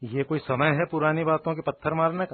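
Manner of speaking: ordinary delivery, nothing marked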